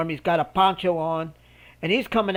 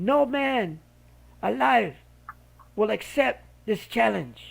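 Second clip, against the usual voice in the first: put-on British accent all the way through; 4 semitones higher, 3 dB quieter than usual. Retelling a manager's challenge about his fighter: imitating a British accent. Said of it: "with this British accent and all".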